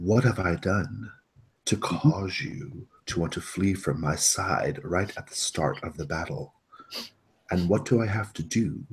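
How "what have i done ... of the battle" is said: whisper, quieter and slower. Speaking to a sword at the start of a battle, whispering. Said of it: "I'm whispering to my sword".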